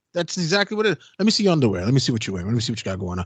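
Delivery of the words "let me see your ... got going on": mock seductive tone, very deep, low and fast. Act out how a man would talk to strippers, imitating a man's seductive tone. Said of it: "He's doing it in that tone, the seductive".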